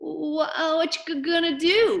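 halting, high, very slow stammering. A kid asks what the other will do to add to the deal: stammering. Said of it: "stammered Russell".

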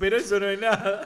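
ordinary talk, nothing marked

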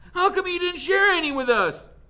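very high shouted voice. One boy calls out to another during questioning, shouting. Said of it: "shouted Armpit".

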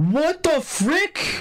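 stunned, exasperated, very high and slow disbelief.

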